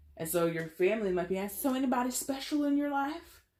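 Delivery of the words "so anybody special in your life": put-on, very high-pitched Southern accent. Imitating family members asking about someone special; southern accent. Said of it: "I don't know why I put on this southern accent".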